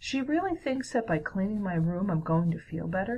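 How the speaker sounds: usual speaking voice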